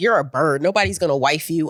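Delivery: mock angry male voices. Retelling comments under a repost: imitating angry men. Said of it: "little angry men in the comments that are like".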